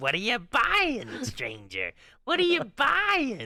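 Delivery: very high, slow, drawn-out swooping call. Retelling how she imitated the Resident Evil 4 merchant: deepened merchant voice. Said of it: "trying to deepen her voice".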